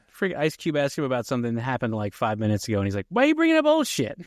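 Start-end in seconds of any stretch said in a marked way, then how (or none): 3.0-4.1 very high-pitched, loud comic outburst. Quoting a favorite movie line: imitating Chris Tucker. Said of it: "Chris Tucker's like".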